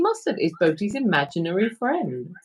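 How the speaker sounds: normal talking voice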